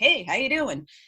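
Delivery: put-on easygoing, relaxed frat-boy regular-guy voice. Speaker imitates how a greeting sounded to them, in a fratty regular-guy voice. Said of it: "it just read as very fratty to me".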